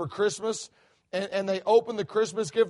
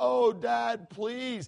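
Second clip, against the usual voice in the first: mock pleading child voice, quieter and slower; 4 dB quieter than usual. A father retells how his youngest daughter begged for a dog, imitating a child pleading. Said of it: "begged and pleaded and cried".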